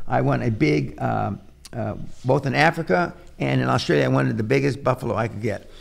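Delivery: ordinary delivery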